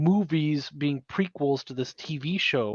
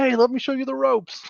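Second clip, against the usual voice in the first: friendly, encouraging voice, pitched higher; 10 semitones higher than usual. Retelling how other players greet newcomers in voice chat: imitating supportive players. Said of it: "everybody else is super supportive and like".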